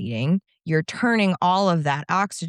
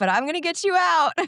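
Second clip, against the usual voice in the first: very high-pitched, loud yelling; 12 semitones higher than usual. Retelling a gravedigger's call to a woman stuck in a coffin, retelling a yell. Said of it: "I yelled back".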